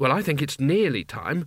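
plain reading voice

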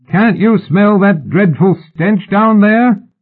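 calling out, pitched very high. A gang leader addressing four men down below, raised voice. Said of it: "He raised his voice".

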